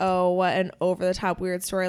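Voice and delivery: ordinary talk, nothing marked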